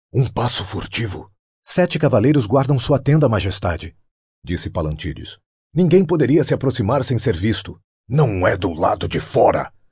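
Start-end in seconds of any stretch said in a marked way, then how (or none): 8.0-9.6 mild roar, read-aloud style. The king replies to a man, roaring. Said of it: "rugiu Conan".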